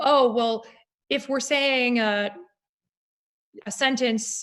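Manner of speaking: plain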